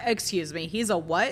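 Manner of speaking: ordinary talk, nothing marked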